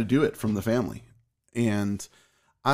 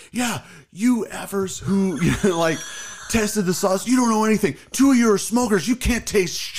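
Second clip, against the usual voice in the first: very high, mad, angry yelling rant; 9 semitones higher, 4 dB louder than usual. Retelling how a man yelled at the people at the front, imitating someone yelling. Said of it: "he like kind of yells at the front and he goes".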